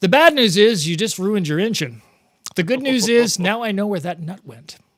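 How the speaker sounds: unfazed, laid-back tone. Retelling his dad's reply after he ruined his engine, imitating a laid-back, laconic dad. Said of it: "He's a very sort of laid back, laconic guy".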